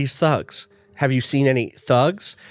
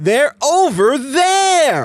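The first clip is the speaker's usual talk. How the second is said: oversold, bizarre bark with wild over-the-top intonation; 10 semitones higher, 3 dB louder than usual. Retelling how an actress read a game line: imitating wild overacted intonation. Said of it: "tone down her wild intonation".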